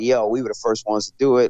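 plain

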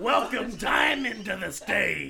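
very loud, very slow, booming club announcer voice. Acting out a strip club announcer introducing a dancer: strip club announcer voice. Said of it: "kinda reminds me of a strip club announcer".

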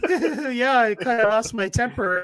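very high, slow, loud serial-killer giggle. Retelling his post-game interview answer, imitating giggling like a serial killer. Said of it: "He was like giggling like a serial killer".

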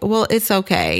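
ordinary talk

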